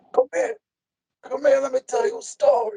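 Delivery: put-on very high-pitched old Italian man voice. Retelling what a friend said, imitating him: old italian guy voice. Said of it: "He talks like an old Italian guy".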